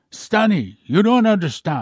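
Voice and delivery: put-on Russian-accented speech. Retelling a lunch conversation, quoting his guest's reply in Stanislav Lunev's Russian accent. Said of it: "with his typical Russian accent".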